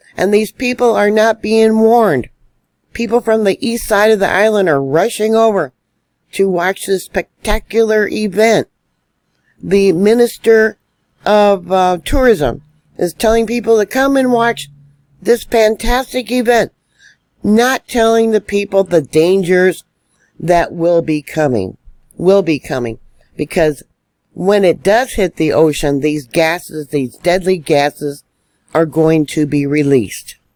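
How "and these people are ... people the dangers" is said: high-pitched, angry ranting voice. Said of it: "Do I sound angry? Yes, I am angry".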